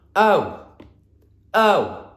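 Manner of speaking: big, loud, high shouty voice. Teaching a letter sound, saying O for the listener in a big, loud, shouty voice. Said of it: "in a big, loud, shouty voice".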